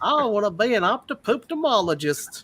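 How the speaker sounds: drawn-out, slow, high Louisiana country twang. Retelling a high school classmate's fake career, imitating a country twang. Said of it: "so he had that country twang".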